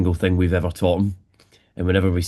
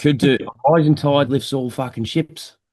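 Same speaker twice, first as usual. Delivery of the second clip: convincing, pitched-up Australian accent; 7 semitones higher than usual. The one called the accent guy says a quote in an Australian accent. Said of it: "That's a very good Australian accent".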